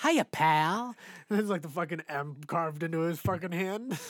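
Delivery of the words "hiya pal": raised, loud, menacing and threatening voice. Quoting a movie line to a friend, Joe Pesci voice. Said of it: "Joe Pesci, it's like".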